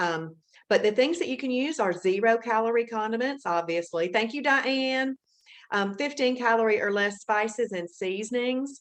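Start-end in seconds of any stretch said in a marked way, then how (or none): 4.1-5.2 high, loud called-out voice. Thanking viewers for sharing on Facebook: yelling out thanks. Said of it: "the reason I'm yelling out "thank you"".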